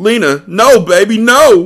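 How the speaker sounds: very high, loud, very slow anguished crying. A narrator reading a man's line as he finds a woman's body: crying out. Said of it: "He cried as he looked".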